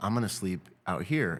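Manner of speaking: plain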